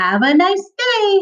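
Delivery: very high, chipper, perky robot voice, slow. Reading a story, voicing police robots greeting passersby: perky voice. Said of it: "in a perky voice".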